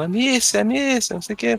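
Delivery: mock high, stretched-out, drawn-out calling shout. Complaining about a game character who keeps yelling: imitating Hugo shouting. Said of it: "ouvir ele gritando".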